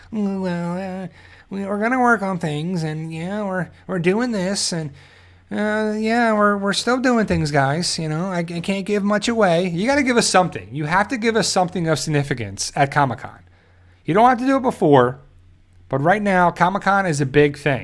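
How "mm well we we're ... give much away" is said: whiny, hesitant voice, tripping over words. Answering a chat comment that the voice needs whining: whiny Gimple impression. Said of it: "my gimple is like".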